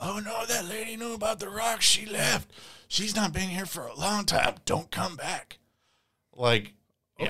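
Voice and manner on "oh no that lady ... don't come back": raspy man's voice pitched very high. Retelling a strange phone call to a dad, the speaker does a raspy man's voice. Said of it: "with a raspy voice saying".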